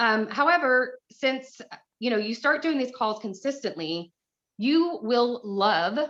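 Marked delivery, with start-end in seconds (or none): 5.4-6.0 emphasized 'love'. Speaker tells listeners they will come to enjoy these calls, with stress on 'love'. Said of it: "capital LOV".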